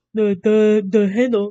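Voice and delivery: silly, goofy, teasing mocking put-on voice. Teasing chat about a drawn bow handle in a goofy mocking voice. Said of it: "I love doing that voice".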